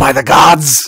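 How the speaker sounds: high, loud cry of sheer terror. Voicing an elf who wakes caged and sees danger: terrified elf. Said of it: "his eyes go wide with terror".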